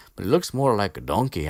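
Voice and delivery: clumsy, unconvincing attempt at an Irish accent. Retelling a book scene, quoting Seamus Finnegan: attempted Irish accent. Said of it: "I cannot do that accent".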